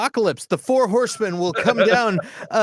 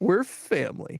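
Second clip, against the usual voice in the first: voice cracking on the word "family"; 5 dB quieter than usual. Showing how to say the family line: Vin Diesel voice crack on family. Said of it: "you got to do the crack in the voice ... That's how you do that".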